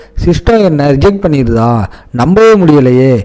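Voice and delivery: ordinary delivery, nothing marked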